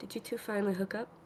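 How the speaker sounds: hushed whisper, very quiet, barely audible. A character nudges Priya and whispers a question to her. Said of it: "she whispers to her".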